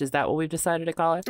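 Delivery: ordinary delivery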